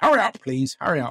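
impatient quiz-host voice. On a podcast, demanding an answer within two seconds, doing a Paxman impression. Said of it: "that's my Paxman impression".

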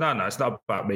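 ordinary talk

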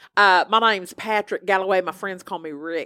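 put-on very thick Alabama-style Southern accent. Retelling how a man introduced himself to a real estate agent: thick Southern accent. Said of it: "he decided to have a very thick Southern accent".

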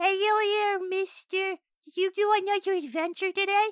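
very high, tiny little goblin creature voice. Voicing a little goblin who greets a returning adventurer: little goblin voice. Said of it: "little goblin mans walks up and goes".

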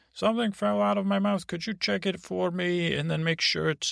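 little, high sock puppet character voice. Making a letter talk like a sack puppet: sack puppet voice. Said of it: "sock package puppet said".

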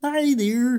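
very high, slow puppet frog voice. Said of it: "that was [name]'s Kermit the Frog voice".

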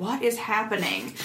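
normal talking voice

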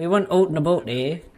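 pirate voice with a Canadian accent. Joking with others, imagining a pirate who was Canadian: Canadian pirate accent. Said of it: "if one of these guys was a Canadian pirate".

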